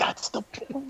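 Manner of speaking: high, unvoiced whisper spoken quietly aside.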